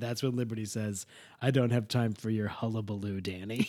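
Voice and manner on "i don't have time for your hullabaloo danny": mock deadpan, lower and quieter. Recapping a TV episode, quoting a character's line in Liberty's deadpan way. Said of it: "In her Liberty deadpan way".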